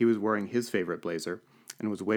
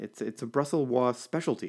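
defensive tone, higher pitch; 4 semitones higher than usual. The narrator replies to Violet, who waves the menu at him accusingly; defensively.

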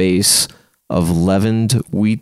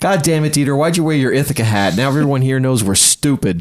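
pitched-up, exasperated, complaining tone; 6 semitones higher than usual. Retelling a moment surrounded by Cornell students, the speaker imitates Hillary saying loudly. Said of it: "she just like says really loudly".

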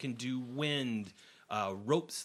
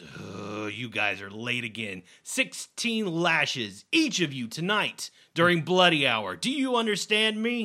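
raised, irritated, annoyed scolding tone, rising; 2 semitones higher, 9 dB louder than usual. Game master voicing Scourge as he spots the five late players, scolding them. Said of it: "he sees the five of you, and he goes".

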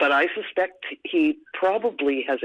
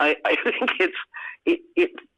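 high, laughing half-words, chuckle mid-sentence. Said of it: "you know, I'm laughing".

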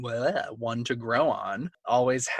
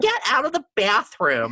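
very high, swooping, hammy overacted yell; 10 semitones higher, 7 dB louder than usual. Retelling a TV scene where a girl yells at her brother through the bathroom door: imitating a girl yelling. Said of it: "like yelling at her brother".

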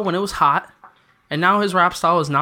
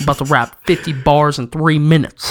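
usual speaking voice

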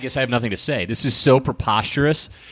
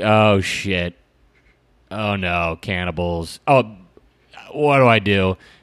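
very slow, drawn-out, stunned, incredulous dismay; 4 semitones lower than usual. Acting out a construction worker finding a cannibal's phone: imitating an incredulous russian man. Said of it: "the most, like, incredulous Russian man ever".

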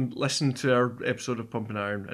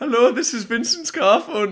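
bad put-on Austrian accent, much higher, louder; 11 semitones higher, 7 dB louder than usual. Too excited, introduce yourself with a hello in a terrible Arnie accent. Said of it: "That is the worst Arnie accent".

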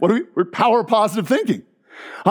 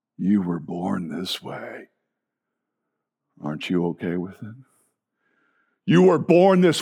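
demonic voice, dropped very low; 13 semitones lower, 4 dB quieter than usual. Acting out the demonic answer to the question posed, in a demonic voice. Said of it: "what's the demonic answer to this?".

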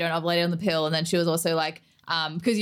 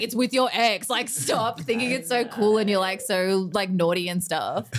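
ordinary talk, nothing marked

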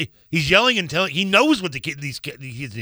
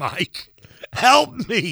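half-hearted, desperate, kept small and restrained; 3 semitones higher than usual. Joking that his inner child is screaming for Mike: mock screaming.

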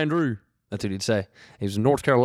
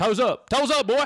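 mock yelling, loud and forceful; 12 semitones higher than usual. Describing a football coach turned ballet teacher, imitating a yelling coach. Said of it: "he was just yelling at people".

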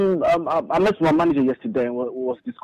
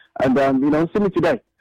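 normal talking voice

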